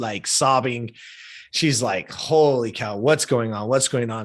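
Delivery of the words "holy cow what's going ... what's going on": normal talking voice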